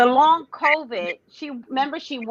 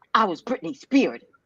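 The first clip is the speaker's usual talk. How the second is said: usual speaking voice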